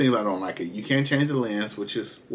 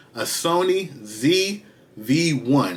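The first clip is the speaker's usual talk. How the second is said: very slow, drawn out, careful, word by word. Naming a camera model so viewers catch it: said slowly. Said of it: "I gotta say this slow".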